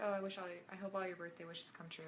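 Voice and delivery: ordinary talk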